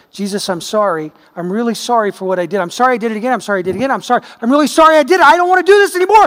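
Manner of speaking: hollow, insincere, going-through-the-motions tone. Speaker on repentance acting out a lip-service apology to jesus. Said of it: "I just give it lip service and I go".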